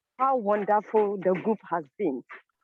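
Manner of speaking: ordinary talk, nothing marked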